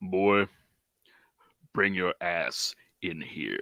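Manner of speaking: deep, low, slow, drawn-out voice. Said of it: "studying that man's voice".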